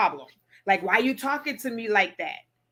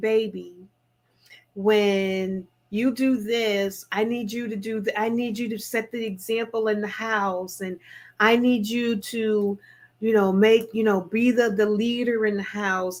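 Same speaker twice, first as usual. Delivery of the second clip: put-on soft, hushed whisper. Retelling how another woman told the wife to talk: imitating a soft whisper. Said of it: "brought her tone down to, like, this, you know, short whisper".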